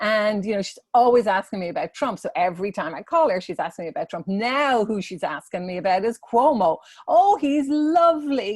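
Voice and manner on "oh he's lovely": put-on admiring, very high, loud Irish accent. The speaker imitates a 90-year-old mother on the phone: mother's lovely Irish accent. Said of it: "in her lovely Irish accent".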